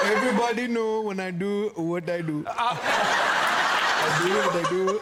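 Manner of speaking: loud big lips voice.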